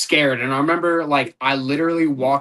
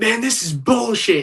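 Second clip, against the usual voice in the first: mock fed-up, furious, angry outburst, pitched up; 8 semitones higher than usual. Retelling own words after losing a fight: imitating own angry outburst. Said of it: "I lost my shit".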